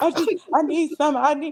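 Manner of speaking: acted, high, desperate pleading that breaks off. Retelling own words to Mama during active labor: imitating own begging. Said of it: "I was begging all type of shit".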